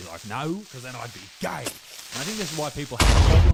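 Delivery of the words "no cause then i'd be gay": acted hostile, aggressive, combative snap-back. Retelling how this dude answered the question: imitating an aggressive reply. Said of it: "he said it in a very, like, you know, a-, aggressive way".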